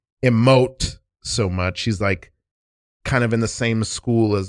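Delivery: ordinary delivery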